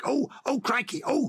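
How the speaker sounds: very high schoolboy cries, dragged out. Recalling the fat schoolboy Billy Bunter from the books: imitating Billy Bunter's voice. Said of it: "he would say things like".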